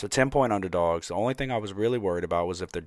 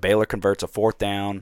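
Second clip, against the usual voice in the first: ordinary talk, nothing marked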